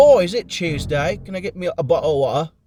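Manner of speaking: put-on bad British accent. Admitting they can't do a british accent, trying generic phrases: bad british accent. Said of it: "the most like generic bullshit phrase like".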